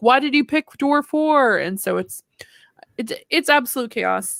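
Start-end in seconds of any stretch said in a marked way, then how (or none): 0.0-1.6 raised, high-pitched screaming. Retelling teammates reacting to one player's vote: imitating screaming teammates. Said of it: "And everyone's screaming".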